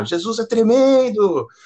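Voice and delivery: very high, loud, acted-out shouted exclamation. Recalling a woman at church who shouted behind the speaker: imitating a woman shouting. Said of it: "ela ficava gritando assim às vezes".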